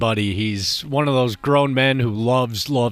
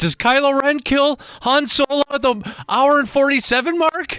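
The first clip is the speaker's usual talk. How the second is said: put-on panicked voice, higher pitch; 14 semitones higher than usual. Retelling a buddy's phone call about a movie spoiler: imitating a friend's panicked voice. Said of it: "he's panic in his voice".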